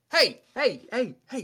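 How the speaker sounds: very high, loud calling-out shouts. Narrating, a voice calls out to stop both characters: shouting. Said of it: "shouting out like".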